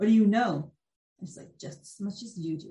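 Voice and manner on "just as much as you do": put-on icy cold voice, much quieter. Retelling a fortune teller answering a confused man, mimicking a cold voice. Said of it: "in a cold voice".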